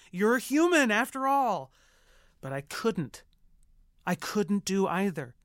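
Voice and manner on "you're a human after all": high, loud, excited yell. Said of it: "I wanted to yell at Tracy".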